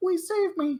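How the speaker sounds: very high, cute little voice. Retelling a scene, voicing the floating Scion in a super cute teddy bear voice. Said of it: "super cute little teddy bear voice".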